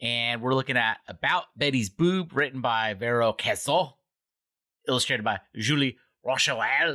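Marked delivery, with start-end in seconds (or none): 2.3-6.9 terrible, fake, put-on French accent and pronunciation. Podcast host reading out the comic's credits: terrible French accent. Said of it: "I love doing a terrible French accent".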